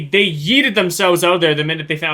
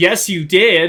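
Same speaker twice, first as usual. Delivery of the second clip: put-on small, sassy little voice; 2 semitones higher, 4 dB louder than usual. Reacting to a droid, voicing what it seemed to say, mock-sassy little voice. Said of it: "in a sassy little voice".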